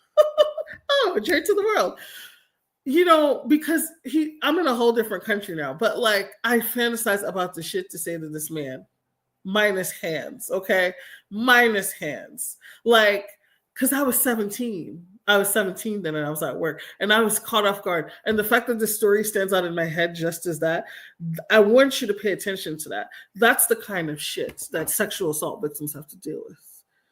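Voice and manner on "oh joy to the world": high, gleeful, joyful cheer. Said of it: "I got happy all over again".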